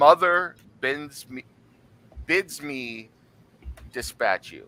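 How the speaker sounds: very slow, drawn-out dragon voice. Telling the players what the dragon says to them: loud booming dragon voice. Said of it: "the loud, booming voice saying".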